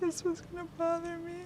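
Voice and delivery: tearful. Going through old belongings of Amanda, Heather and Kyle, she speaks while crying.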